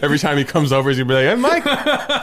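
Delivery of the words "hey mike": put-on very high-pitched Albanian accent. Imitating an in-law greeting Mike on a visit: put-on Albanian accent. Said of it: "What was that accent".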